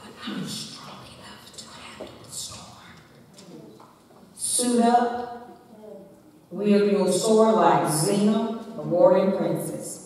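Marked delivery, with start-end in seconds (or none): 0.0-2.9 barely audible whisper. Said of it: "the enemy whispers in your ear".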